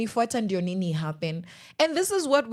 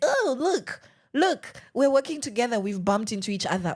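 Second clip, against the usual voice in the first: put-on, feigned innocent tone. Retelling how a man following her acted: imitating a man feigning innocence. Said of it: "and then he acts like".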